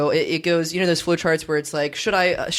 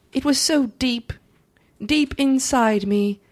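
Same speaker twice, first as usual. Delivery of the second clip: put-on British woman's voice, higher; 7 semitones higher than usual. Reading a farewell letter aloud: Gwen Ifill voice. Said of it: "I'll read it in her voice".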